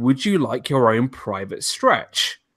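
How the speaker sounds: very quiet, hushed, low-key, confidential voice. Retelling what a Haunted Mansion maid asked: imitating someone speaking quietly. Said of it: "she says to me very quietly".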